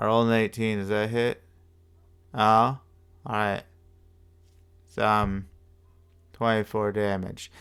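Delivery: flat, dull, bored-sounding delivery. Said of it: "That right there was already boring".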